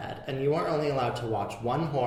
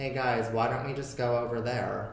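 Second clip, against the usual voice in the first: mock offhand, flat, nonchalant monotone. Acting out an unnamed female character nodding to the corner: mock-nonchalant flat monotone. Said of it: "with the most non nonchalant, nothing to it ... my impression of that ... exact monotone".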